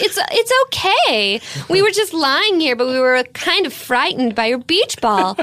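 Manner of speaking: put-on nice 1980s teenager voice. Retelling teens answering a girl whose beach ball hit them, in an 80s nice teenager voice. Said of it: "they're so like 80s nice teenager".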